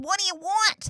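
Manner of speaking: sassy New Yorker voice. Showing the voice used for the dog, sassy New Yorker Ghostbusters voice. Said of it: "sassy New Yorker kind of style".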